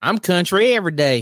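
clearly fake, put-on country accent. True Comedy co-host answering his co-host at the show's opening, put-on country voice. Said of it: "that's not his real voice".

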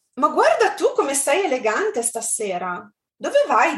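nice, positive, pleasantly surprised tone. Demonstrating an Italian example phrase for listeners, positive, pleasant surprise. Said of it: "they both sounded so much more positive".

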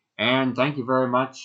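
announcer voice, like over a loudspeaker. Recounting the horse racing announcements, in a loudspeaker announcer voice. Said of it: "I'm doing the like announcer voice of a loudspeaker".

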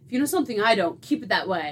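put-on smug voice. Retelling a scene where a character warns someone, imitating someone smug. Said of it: "walks away all smug".

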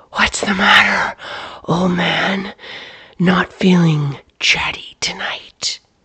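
taunting, menacing, disembodied mocking whisper. In a story read aloud, a disembodied voice speaks to Clyde in the barn, whisper. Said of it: "A disembodied voice swooped forward from out of the inky void, pressing Clyde back against the wall of the barn. It came from all directions, and yet it was only a whisper. / [name]? / and yet it was".

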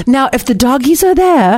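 bad, terrible put-on French accent. Retelling what a woman said to them, in a terrible French accent. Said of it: "this is a terrible French accent".

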